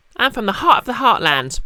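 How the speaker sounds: butchered fake Southern American accent. Speaker admits butchering an accent while trying a line: bad Southern American accent. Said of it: "I'm butchering butchering a Southern American accent".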